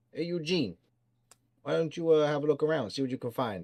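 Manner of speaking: gangster-style voice. The narrator voices Filch speaking to Eugene, in Filch's gangster voice. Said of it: "the smart one that sounds like a gangster".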